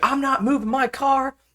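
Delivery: screeching, shrill, very high, furious angry yell. Retelling a woman who refused to move her car, retelling a yell. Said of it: "Now she's yelling at me".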